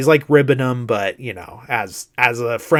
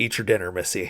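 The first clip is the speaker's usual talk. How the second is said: put-on fatherly grandpa tone, lower and quieter; 4 semitones lower, 7 dB quieter than usual. Retelling a scene, the old man answering the hitchhiker: imitating dad or grandpa mode. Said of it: "right into dad slash grandpa mode".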